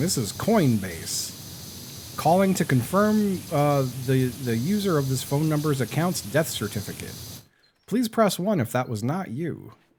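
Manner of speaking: robotic, automated recorded phone message voice. Retelling a phone message they finally listened to, in a robot voice. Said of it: "it was a robot voice going".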